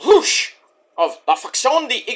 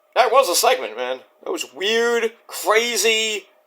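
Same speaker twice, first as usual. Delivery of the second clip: plain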